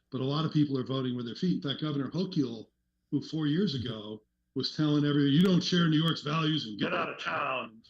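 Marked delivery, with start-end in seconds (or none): 5.3-7.6 put-on tough, hard-nosed, dismissive brush-off tone. Retelling what Governor Hochul said four years ago, imitating acting tough. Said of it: "she's being all tough".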